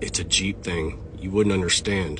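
low, dropped voice like a movie cowboy. Retelling what a Jeep owner said up close: Clint Eastwood voice. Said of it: "in his best Clint Eastwood voice".

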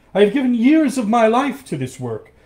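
high, loud cry, protesting in tone. Narrator reads the professor's line as he fights Coppelius over her, crying out. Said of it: "cried the professor".

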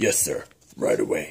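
very low-pitched, soft voice. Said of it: "do your Boba voice".

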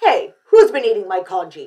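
very loud, insistent, demanding voice. Narrator reads Mr. Chan as the Chans head into the kitchen, demanding. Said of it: "demanded Mr. Chan".

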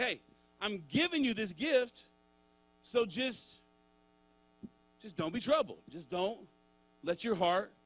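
casual, nonchalant, no-big-deal, easy-going tone. Paraphrasing Jesus's words with a nonchalant, chill delivery. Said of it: "that's his attitude. He's like".

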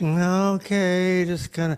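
subdued, barely audible, too-quiet hushed voice. Showing how quiet the people in the room sound: imitating a too-low quiet voice. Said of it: "it's like too low".

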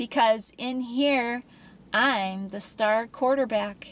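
plain reading voice

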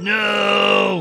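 loud, anguished shout.

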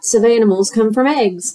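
plain reading voice

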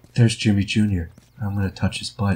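put-on monotone teen girl voice. Asked by another player to be Tina, doing her voice. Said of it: "be Tina".

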